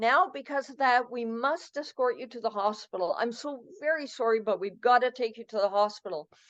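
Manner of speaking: normal talking voice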